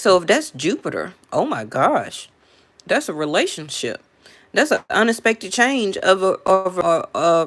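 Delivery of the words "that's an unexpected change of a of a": stuttering, tripping over the words. Reading cards aloud and struggling to get the word out: stuttering. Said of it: "I'm stuttering".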